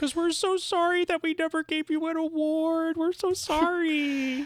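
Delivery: very high, drawn-out, over-the-top pitying tone. Mock apology to Demi Moore for never giving an award, exaggerated mock-pitying voice. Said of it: "You're doing this like pity voice".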